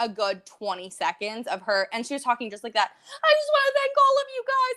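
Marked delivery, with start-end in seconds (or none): 2.9-4.8 shrill, very high shrieking gush. Retelling how she talked into the microphone, imitating someone shrieking. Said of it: "shrieking kind of into that microphone".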